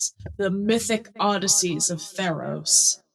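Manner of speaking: slow, grand, theatrical, dramatic delivery. Correcting a sourcebook title mid-explanation: mock dramatic delivery. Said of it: "I wanted to be dramatic".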